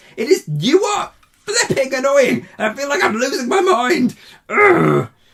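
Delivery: worked-up, exasperated ranting. Ranting to viewers about a movie, worked up, ranting. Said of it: "I need to calm down now".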